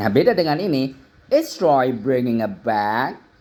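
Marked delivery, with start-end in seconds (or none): 1.3-3.2 rising pitch lift on "bag". Explaining English question intonation in Indonesian, rising pitch at the end. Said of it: "Nadanya naik".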